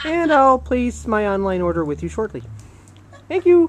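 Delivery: high-pitched cartoon frog puppet voice. Pitching a joke voicemail greeting for Connie's phone, in a Kermit the Frog voice. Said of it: "Kermit the Frog here".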